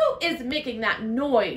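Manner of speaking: firm, insistent, demanding tone. Miss Merriweather strides out of her office after the lion roars, demanding. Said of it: "she demanded".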